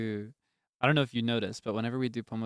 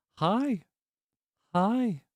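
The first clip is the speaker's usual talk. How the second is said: very high, birdlike talking-raven voice; 11 semitones higher, 4 dB louder than usual. Sharing trivia about ravens that can talk, imitating one: talking raven voice. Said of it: "They go".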